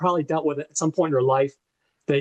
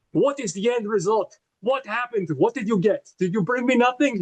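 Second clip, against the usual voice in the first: horrible, clumsy put-on Russian accent, pitched up; 7 semitones higher than usual. Retelling a mob boss demanding results from a man, in a horrible Grozny accent. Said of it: "I'm doing a horrible accent".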